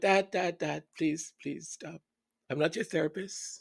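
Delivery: play-acted begging, pleading voice with repeated words. Retelling begging a father to stop complaining: retelling own plea to stop. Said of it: "I'm like".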